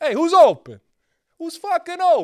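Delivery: very high, very loud, swooping Italian-American yelling. Imagining an Italian LeBron calling for the ball, in an Italian LeBron voice. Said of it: "If LeBron was Italian".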